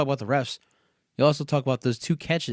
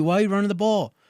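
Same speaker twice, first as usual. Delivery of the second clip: put-on loud hollering; 6 semitones higher, 3 dB louder than usual. Retelling watching a fumble at a pizzeria: imitating screaming at the TV. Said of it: "I'm screaming at the T V".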